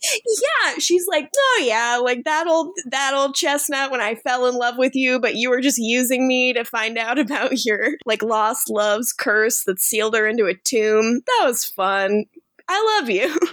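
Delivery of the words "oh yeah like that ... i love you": ordinary talk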